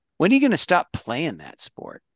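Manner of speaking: sassy, high, sing-song put-on voice. A teacher retells what a quiet student in the back asked, imitating a sassy student. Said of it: "in a pretty sassy 19-year-old voice goes".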